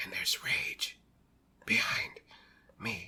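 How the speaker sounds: flat movie-style whisper. Mocking an actor's one-note movie delivery, do a Statham whisper impression. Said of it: "Every line of dialogue was delivered like this".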